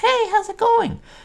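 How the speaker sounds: very high falsetto. Explaining how a man's character voice worked, demonstrating the high-pitched falsetto. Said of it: "he could pitch up his voice and do more of a this".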